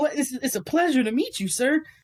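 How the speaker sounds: put-on very high, stammering, flustered anime boy voice. Imagining meeting someone famous in person, mock-flustered anime boy voice. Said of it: "I'm gonna sound like a fucking anime boy".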